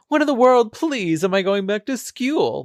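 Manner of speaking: put-on, mock, smarmy, charming voice. Describing a smarmy character, the speaker imitates him with mock smarmy charm. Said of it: "he charmingly said".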